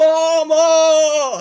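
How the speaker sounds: very high, very loud, shrill, drawn-out wail. Retelling an arrested man calling for his mom: imitating a cry for mom. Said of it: "Calling for his mom to help him".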